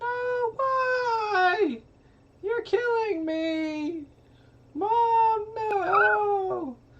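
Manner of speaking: put-on very high, very slow begging, pleading child voice. Voicing a wounded little kid in a fire, pleading: quiet weak pleading child voice. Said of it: "you hear the little kid kinda screaming in Elven".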